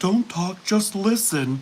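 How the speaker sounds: put-on tearful voice. Acting out answering a telemarketer's call as a joke: fake weepy voice. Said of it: "that weepy voice caller intro".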